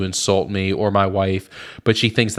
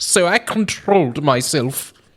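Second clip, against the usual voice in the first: put-on British-accented delivery, higher; 8 semitones higher than usual. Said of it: "read it like a British person".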